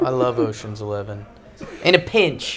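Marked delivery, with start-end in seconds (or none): 1.8-2.6 high, put-on London Cockney accent. Recalling a line from the film Ocean's Eleven: put-on Cockney accent. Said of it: "that's your Cockney accent?".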